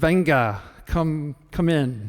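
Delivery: big, resounding, booming voice. Recalling knocking on a cheesemaker's cave door, answering in Ambrosio's booming voice. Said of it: "he answered with this booming uh, voice".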